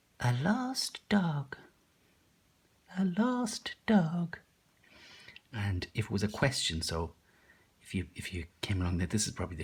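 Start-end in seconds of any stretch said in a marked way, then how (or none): 0.2-4.4 put-on old lady voice, very high, very slow, drawn-out. Demonstrating voices for practicing read-aloud phrases, in an old lady voice. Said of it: "My old lady voice might be a bit silly".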